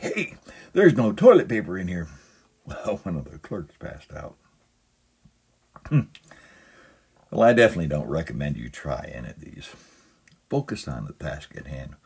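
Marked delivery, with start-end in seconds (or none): 0.0-2.1 very loud, high-pitched yell. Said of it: "then yelled very loudly".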